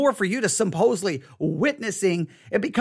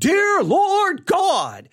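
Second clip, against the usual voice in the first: put-on very high, loud, swooping, declaiming out loud; 10 semitones higher, 4 dB louder than usual. Retelling how a man at a table began praying: imitating someone praying loudly. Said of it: "praying loud".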